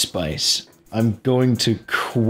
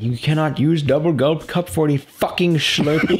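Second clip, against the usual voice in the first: put-on high, angry, irate store-clerk rant; 5 semitones higher than usual.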